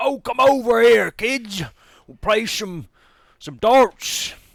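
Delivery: put-on very high, slow, drawn-out Southern hillbilly accent. Retelling what an old man by a dart game said, imitating a southern hillbilly accent. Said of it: "You could just tell from his accent".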